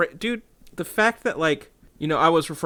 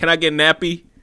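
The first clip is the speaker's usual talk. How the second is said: put-on dumb Philly guy voice, higher and louder; 4 semitones higher, 6 dB louder than usual. Describing the character, the dumb guy from Philly: Always Testy impression. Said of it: "walk into places, like".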